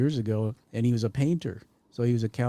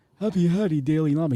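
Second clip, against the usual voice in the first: put-on Sicilian accent, higher pitch; 5 semitones higher, 4 dB louder than usual. Quoting a man's repeated phrase, imitating a Sicilian accent. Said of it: "with a bit of a you know, Sicilian accent".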